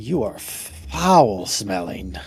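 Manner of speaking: voice full of disgust. Voicing Drellna telling a player he smells: voicing Drellna squinting in disgust. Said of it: "kinda squint and be like".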